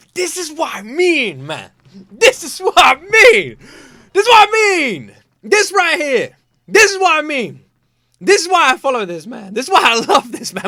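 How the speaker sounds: cracking, breaking voice. Reacting with praise to the lines just played: voice breaking. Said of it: "My voice is breaking".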